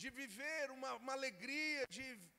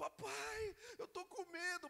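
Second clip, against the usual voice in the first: put-on high, tearful, frightened child's voice, sobbing; 6 semitones higher than usual. Recalling frightened daughters at a park after dark, imitating daughters crying. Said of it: "chorando assim".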